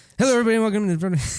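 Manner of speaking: mock rapid-fire delivery, rattled off quickly. Co-host imitates how the podcast host rushes the opening, imitating a rapid-fire podcast intro. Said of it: "you got the the pacing down".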